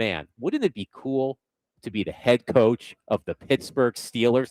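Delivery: normal talking voice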